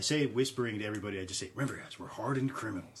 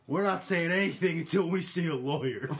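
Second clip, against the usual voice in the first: loud, high-pitched shout; 7 semitones higher, 5 dB louder than usual. Answering the constable's questioning in a scene, shouting. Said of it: "Germ shouts out".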